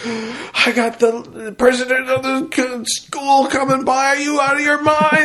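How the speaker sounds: mock angry, very high-pitched, drawn-out screaming. Speaker recounts a man finding people gambling, reenacting someone screaming. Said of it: "He starts screaming".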